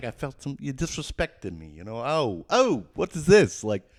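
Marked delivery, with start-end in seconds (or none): 0.0-1.7 trying out a New York accent. Complaining about feeling disrespected at a job: new york accent. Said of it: "trying to do, like, a New York".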